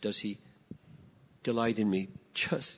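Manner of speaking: play-acted trembling, quavering, wavering voice. Speaker acting out someone who comes to him with a question, imitating a wavering voice. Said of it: "their voice is wavering".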